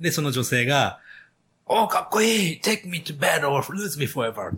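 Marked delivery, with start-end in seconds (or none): 1.8-4.5 put-on excited high-tension delivery, much higher, faster. Retelling a film scene, quoting a woman's line, imitating an excited movie line. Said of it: "なんそんなテンションで言うんですか".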